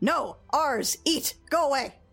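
chorus of many telepathic rat voices. A game master voices glaring rats speaking telepathically to the player, telepathic rat voices. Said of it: "you hear a telepathic voice, lots of telepathic voices".

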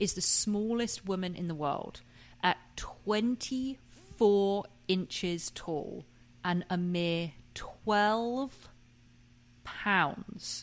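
deliberate read with long, weighty dramatic pauses. Reading out an item about the world's smallest woman with long dramatic pauses between phrases. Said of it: "I'm doing a lot of dramatic pauses here because I just want that to sink in".

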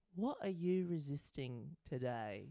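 put-on soft, failed British accent that lands Australian. Retelling what a man says, attempted british accent. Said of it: "That's Australian".

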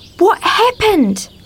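frightened whisper. Narrator voicing Arthur, who sees paddocks where houses should be; frightened whisper. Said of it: "whispered Arthur, frightened".

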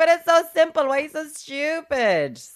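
mock very high, tipsy-sounding drunk voice. Retelling what a drunk man said, imitating a drunk. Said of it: "he's drunk".

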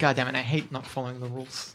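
hushed, low mutter under the breath. During a D&D session, a player muttering under their breath. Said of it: "Just jokes muttered under my breath".

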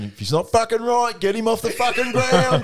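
very high-pitched, blunt, rising, anything-but-subtle outburst. Retelling how Pago made a beeline for you, imitating Pago's sarcastically called subtle tone. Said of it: "in his real subtle tone".

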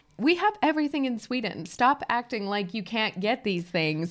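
ordinary talk

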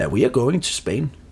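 put-on English spoken with a Danish accent. Retelling a flight attendant's answer on a plane, in an English-Danish accent. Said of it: "med en engelsk-dansk accent".

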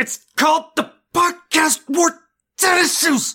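very high-pitched, dramatic cry. Doing the line from Lost that was suggested: Lost "they took my boy" impression. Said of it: "from Lost, "They took my boy."".

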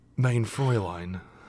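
put-on soothing, chill calm voice. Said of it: "it really does sound like him".

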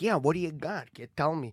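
put-on Chicago accent. Describing meeting Sebastian, the speaker imitates how he talks normally, Sebastian's Chicago accent. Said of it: "he just kind of sounds like a guy from Chicago".

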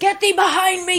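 high, dramatic villain voice.

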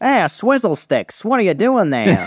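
put-on very high, swooping old-timey baseball player voice. Joking that a speech tool turned the other speaker into an old-timey baseball player voice. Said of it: "an old-timey baseball player".

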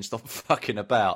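ordinary delivery

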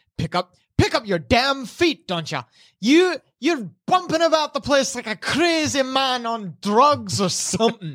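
high-pitched, angry, scolding shouted yell. Voicing a crew member yelling at a sailor in an argument: yelling as Messiah. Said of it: "Messiah is just yelling, like".

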